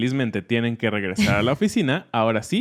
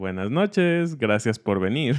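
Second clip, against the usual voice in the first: teasing, mocking, sarcastic tone. Acting out coworkers greeting someone who arrives late: imitating a sarcastic coworker. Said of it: "con este tono un poco, eh, sarcástico".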